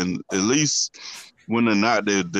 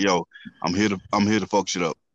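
put-on defiant, tough child voice. Imitating the middle daughter who never cared: imitating Lily's defiant tone. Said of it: "In that tone too".

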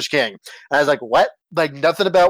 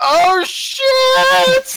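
put-on very high, loud, drunken blurt with shit drawn out; 4 dB louder than usual. Retelling a friend's outburst in a tense movie scene: imitating Lyle blurting out loud. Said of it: "drunk Lyle just goes, ... out loud".

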